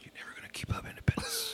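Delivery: very quiet, soft, snide whisper. Taunting the city of Independence as if it were the Joneses: whispering like Joe Biden. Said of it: "I'm doing the Joe Biden thing".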